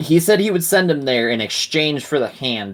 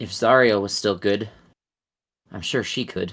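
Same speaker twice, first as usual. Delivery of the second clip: sad, mumbling character voice; 3 semitones lower than usual. Narrating the game, the speaker voices Lulu answering the players in a sad voice. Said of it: "Lulu kind of says in a sad voice".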